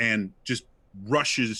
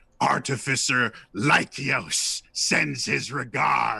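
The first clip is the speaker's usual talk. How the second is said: metallic, mechanical, machine-made robot monster voice; 3 semitones higher than usual. A game master voices a giant mechanical monster's message, in a metallic voice. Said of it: "in a, a metallic voice".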